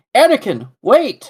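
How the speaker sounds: urgent, very high pitch. Joking about the game's dialogue, do an Obi-Wan impression. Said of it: "him going".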